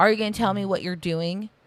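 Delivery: put-on sharp snapping voice. Retelling how Tammy snaps at Amy at the table: imitating Tammy snapping. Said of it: "she snaps at Amy like".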